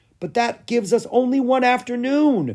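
very high, loud crying out. The king's son answers his father and a companion, crying out. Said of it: "cried Lucas".

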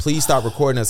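ordinary talk, nothing marked

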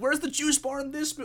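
high, loud mock complaining tone.

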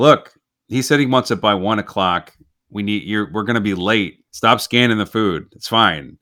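plain

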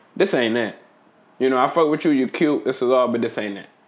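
normal talking voice

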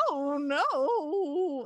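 "no" stretched out in a country drawl. Describing the characters, doing the dog's voice as he'd say it: Barnaby's country dog voice. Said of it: "he's like kind of country and he'll go".

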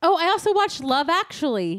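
shrill, loud yelling. Remembering another Christmas show you watched, you tell the other speaker, yelling. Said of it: "You're yelling".

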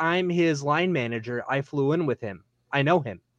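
ordinary delivery

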